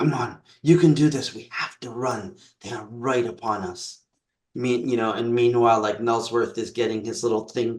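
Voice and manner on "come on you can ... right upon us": whispering. A character speaks to another in an acted scene; whispering. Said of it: "I kind of whisper to you".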